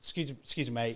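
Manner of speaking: gentle, careful, soft, calm and unthreatening polite tone. Retelling how they addressed a big man while running: retelling a calm request. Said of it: "like trying to calmly be like".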